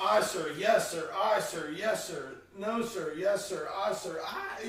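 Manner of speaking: ordinary talk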